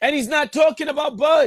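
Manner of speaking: high-pitched, loud, excited shout.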